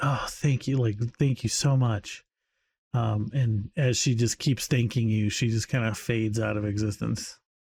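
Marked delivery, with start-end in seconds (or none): 0.0-2.2 audibly, very relieved. Voicing a character thanking the player after being guided through it, very relieved. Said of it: "she seems kind of very relieved".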